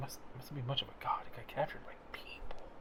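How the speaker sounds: hushed, very quiet whisper. Whispering in character to two companions about the god: whispering. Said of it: "I'm whispering to you and to Dawn".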